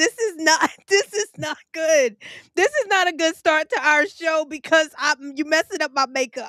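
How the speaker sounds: talking through laughter. Laughing too hard to start the show, laughing while talking. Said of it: "I have tears coming out my eyes".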